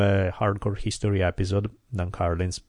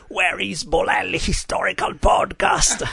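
raging creature voice, very high and rough; 11 semitones higher, 3 dB louder than usual. Acting out a scene of Gollum pissed off about a podcast, in a raging Gollum voice. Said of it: "Gollum from Lord of the Rings when he's all pissed off and raging".

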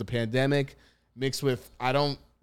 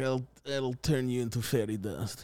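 laid-on, cheesy, bad fake Russian accent; 6 dB quieter than usual. Imitating a movie character's terrible fake Russian accent. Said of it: "very American doing Russian accents".

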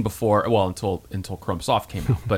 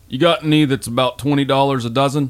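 easygoing put-on Southern accent; 3 semitones higher than usual. Retelling a talk with the next door neighbor, imitating Tom in Southern accent. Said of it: "I make him Southern".

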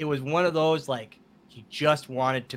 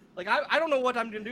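put-on trembling pleading voice, higher pitch; 11 semitones higher than usual. Retelling own words to a friend who was leaving: imitating own shaking plea. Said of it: "now I'm, like, shaking".

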